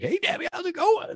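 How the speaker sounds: full countdown-host radio voice, pitched very high. Retelling a video greeting made for your mother-in-law, go into full Casey Kasem mode. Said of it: "He went into full like Casey Kasem mode".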